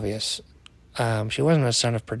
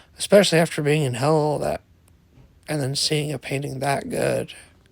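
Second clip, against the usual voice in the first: usual speaking voice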